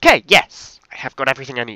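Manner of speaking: thrilled, very loud, swooping shout at full volume. Finishing gathering every item needed, then apologizing: shouting with excitement. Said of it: "Sorry for shouting there".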